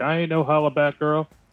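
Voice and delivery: high yell in a put-on character voice. Voicing a character yelling from down on one knee: yelling in character. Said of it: "Bjork's yelling from being down on one knee".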